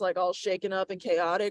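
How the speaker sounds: normal talking voice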